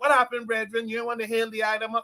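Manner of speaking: put-on Jamaican patois. Retelling how a man with dreadlocks greeted him: imitating a fake Jamaican accent. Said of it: "trying to speak like Jamaicans".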